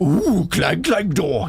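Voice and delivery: put-on Neanderthal caveman voice. Joking about how a name sounds when said, in a Neanderthal-sounding voice. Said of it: "like a Neanderthal sort of sounding voice".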